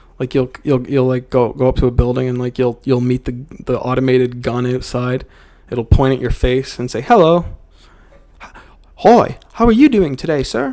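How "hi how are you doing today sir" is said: polite, light, high little British accent. Describing an automated gun greeting you outside a building, little british accent. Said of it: "it'll have like a little British accent".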